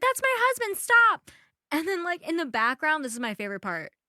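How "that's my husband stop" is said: put-on very high, loud drunk voice. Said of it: "yeah, like".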